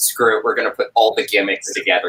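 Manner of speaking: ordinary talk, nothing marked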